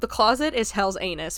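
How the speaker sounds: ordinary talk, nothing marked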